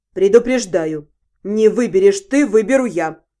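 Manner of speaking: very low, impatient, interrupting tone. Narrator reads a man impatiently interrupting the woman hesitating over a ring. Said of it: "Нетерпеливо перебил меня он".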